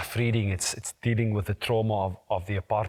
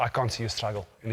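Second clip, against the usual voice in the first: ordinary delivery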